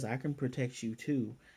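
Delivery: ordinary delivery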